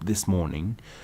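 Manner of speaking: ordinary delivery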